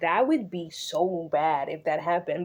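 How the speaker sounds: ordinary delivery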